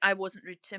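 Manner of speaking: plain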